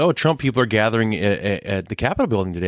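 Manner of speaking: plain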